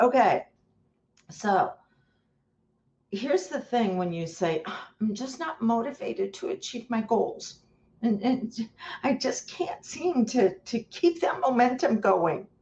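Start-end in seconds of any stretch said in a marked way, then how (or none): 5.0-12.4 whining, complaining tone. Acting out what a listener says about their goals, in a mock-whiny voice. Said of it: "I do it in a whiny voice".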